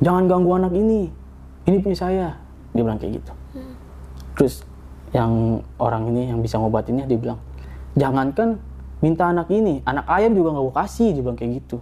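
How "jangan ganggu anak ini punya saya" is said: put-on outright yell, raised, sharp and high-pitched. Retelling what the possessed younger sibling shouted at the healer, retelling a shout. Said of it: "dia teriak".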